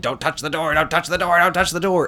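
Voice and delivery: high, repetitive, robotic machine-voice yell. Describing a pinball machine's door bonus, imitating a robot yelling. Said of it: "you'll have this robot yelling".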